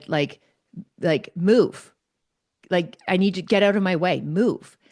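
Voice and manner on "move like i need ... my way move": mock, firm, forceful, assertive tone. Retelling how the woman with them told an unhomed man to move, imitating an assertive command. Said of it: "in a very assertive voice".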